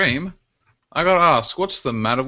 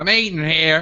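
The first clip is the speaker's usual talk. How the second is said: put-on American Texan accent; 3 semitones higher than usual. Imitating a brash New Yorker, slipping into a put-on Texan accent. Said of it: "that was actually Texan".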